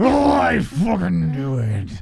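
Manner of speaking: very slow, very drawn-out pirate-style voice. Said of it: "You sound like a pirate there".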